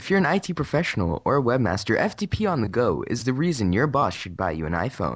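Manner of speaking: radio broadcaster voice, read like announcer copy. Presenting an iPhone app, reading its description aloud, broadcaster voice. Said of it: "I'm just going to read this in my broadcaster voice".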